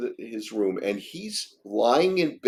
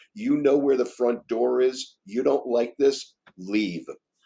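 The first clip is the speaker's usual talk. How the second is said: acted-out raised voice. Retelling what a woman told him, imitating her raised voice. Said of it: "she raises her voice and says".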